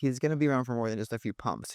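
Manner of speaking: usual speaking voice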